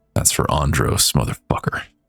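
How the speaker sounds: nasty muttering. As a passer-by walks past the player, nasty muttering. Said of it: "muttering some nasty things about you".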